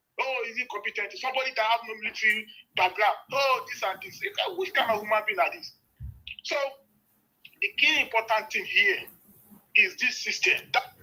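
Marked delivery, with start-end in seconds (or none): none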